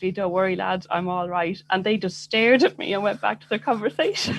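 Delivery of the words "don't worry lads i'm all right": ordinary talk, nothing marked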